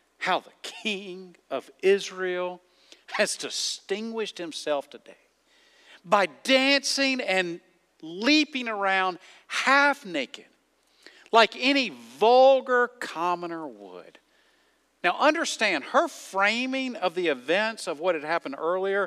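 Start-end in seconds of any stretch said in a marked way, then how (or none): none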